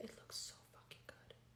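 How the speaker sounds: very soft, breathy whisper under the breath. Blending foundation with a brush while talking to viewers: whispering. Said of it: "I'm whispering it".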